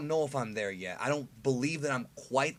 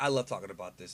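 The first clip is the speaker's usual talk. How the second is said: low, soft, unenthusiastic deadpan. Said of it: "as you can't tell by the enthusiasm in my voice".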